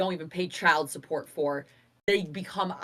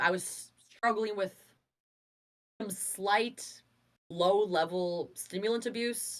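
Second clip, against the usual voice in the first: ordinary talk, nothing marked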